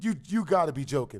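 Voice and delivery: ordinary talk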